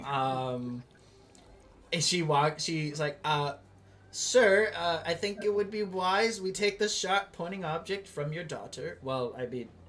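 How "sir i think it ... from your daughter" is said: nervous, flustered, hesitant stammer, much higher pitch. Game master voicing a shop lady addressing a man, nervous, stammering shop lady. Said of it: "Uh, [name]. / Uh, she's like, / "Oh, uh, y- you're back!".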